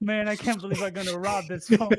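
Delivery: mock weepy, sobbing, high crying voice. Acting out what a would-be robber said, joking: imitating someone crying. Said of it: "He was crying 'cause he's like".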